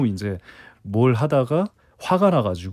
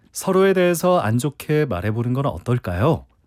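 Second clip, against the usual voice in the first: ordinary talk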